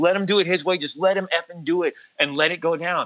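angry, mad yelling. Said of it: "and he's mad".

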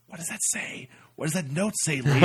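put-on hushed, desperate whisper. Like you're recalling a silent tractor ride, desperately whispering to the stranger beside you, dying to know a note's message. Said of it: "she's just kind of like Jersey girls going like".

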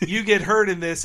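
usual speaking voice

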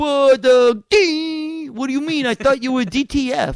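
very loud, high "D", drawn out. Retelling a Jersey Shore scene: The Situation voice. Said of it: "this is the situation".

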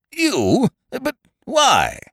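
very high, helpless, flustered spluttering. A nobleman reacts to another man's admission about the wire, spluttering helplessly. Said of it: "the nobleman spluttered impotently".

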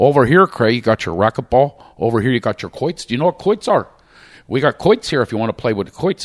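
put-on Pennsylvania Shamokin coal-region accent. Retelling a tour guide's patter in the Poconos, Shamokin coal-region accent. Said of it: "with that Shemokin Cole accent".

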